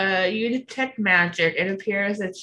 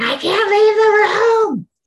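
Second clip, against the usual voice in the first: shrill, very high, very loud screaming; 14 semitones higher, 8 dB louder than usual. A game master voices a woman grabbing a player's character by the neck, screaming. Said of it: "starts screaming".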